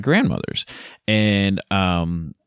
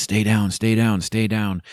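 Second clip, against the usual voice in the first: imitated whispering; 2 semitones higher than usual. Retelling telling the kids to stay down near deer: imitating own whisper. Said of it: "I'm whispering to the kids".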